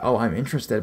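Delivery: ordinary delivery, nothing marked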